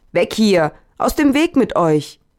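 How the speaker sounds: shouting loudly. A beggar pushes through a crowd, shouting. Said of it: "Dann ging der Bettler und schrie".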